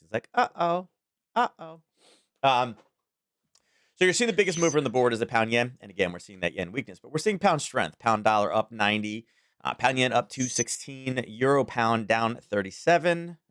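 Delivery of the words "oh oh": put-on tiny, high toddler voice, very slow. Telling how he has learned to say it, doing it in his little tiny voice. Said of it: "in his little tiny voice".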